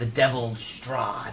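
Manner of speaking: voice dropping low. Narrating a scene, the speaker voices a character's reply in a lowered voice. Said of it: "and his voice lowers as he says it".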